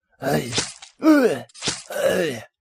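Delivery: jack-o'-lantern character voice. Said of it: "that's a jack-o'-lantern being carved up".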